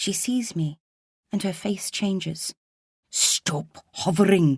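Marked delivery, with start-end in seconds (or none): 3.1-4.6 spoken as a raised, forceful hiss. Narrator reads a woman's line to the narrator, hissing. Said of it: "she hisses".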